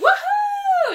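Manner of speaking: very high, loud, wild, triumphant cackling whoop. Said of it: "Bellatrix is like".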